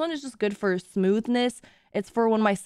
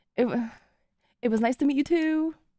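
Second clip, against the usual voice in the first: nervous, flustered stammer, higher pitch; 6 semitones higher than usual. Saying goodbye to someone just met, nervous stammer. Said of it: "Sorry, I got nervous".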